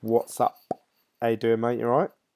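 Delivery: ordinary talk, nothing marked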